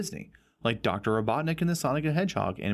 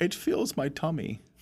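put-on British accent, higher pitch; 5 semitones higher than usual. Joining another speaker's honey bit, the speaker does a Winnie the Pooh impression. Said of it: "You sound like a British guy with a honey fetish".

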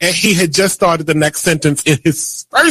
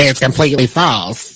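put-on celebrity voice delivered completely deadpan; 5 semitones lower than usual. Reading a quoted denial of rumors: Tyler Perry impression. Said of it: "That was your Tyler Perry impression?".

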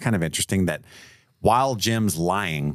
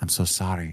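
put-on quiet, heavy, weighty, earnest voice; 5 dB quieter than usual. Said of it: "so much weight to the way that she says it".

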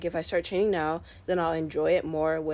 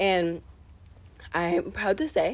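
cracked voice breaking partway through; 3 semitones higher than usual. A runner talks about an undefeated season, voice cracking. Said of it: "my voice just cracked".

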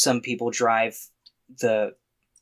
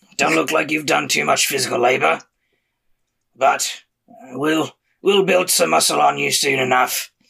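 gravelly, rough-edged, creaky character voice; 6 semitones higher, 4 dB louder than usual. Game master voicing a character speaking to the player Locke, in a gravelly voice. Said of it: "sometimes the gravelly voice takes a lot out of me".

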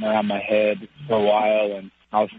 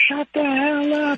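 play-acted, very high-pitched, yelled outburst. Recalling playing guitar after work, the speaker imitates their mom yelling at them. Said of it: "my mom yelling at me".

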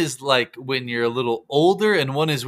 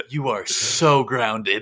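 mocking, sassy, talking-down put-on voice with attitude. Imitating their mom grounding them, in a mock-sassy mom voice. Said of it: "that just sounds like more sassy".

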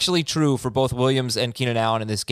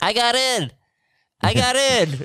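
put-on very high, slow, stretched-out young voice; 10 semitones higher than usual. Act out Justin Herbert at the end, in a young-sounding Justin Herbert voice. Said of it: "says such a young voice".

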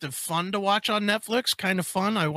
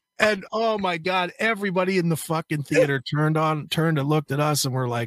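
ordinary talk, nothing marked

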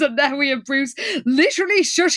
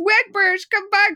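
high-pitched, wailing, pleading voice. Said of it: "when Liz wails".

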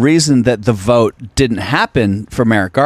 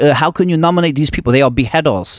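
terrible fake put-on French accent; 4 semitones higher than usual. Voicing what no one in France is saying, in the worst French accent ever. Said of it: "That's the worst French accent ever".

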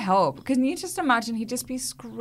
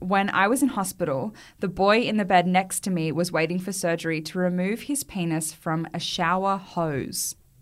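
ordinary talk, nothing marked

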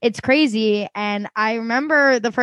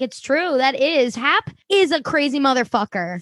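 ordinary delivery

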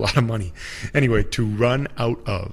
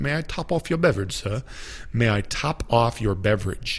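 put-on British accent on every word. Teaching the english phrase "top off" with an example, in a british accent. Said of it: "in a British accent".

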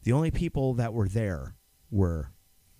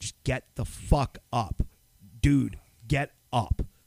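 put-on screaming; 3 semitones higher than usual. Retelling screaming at him in the crematory room: imitating own past screaming. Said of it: "screaming at him".

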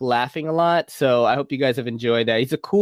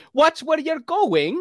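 Filipino and British accent blended, pitched way up; 13 semitones higher than usual. Recalling a role played with an English accent, the speaker demonstrates a Filipino-British accent mix. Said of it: "I'm trying to do like Filipino and British at the same time".

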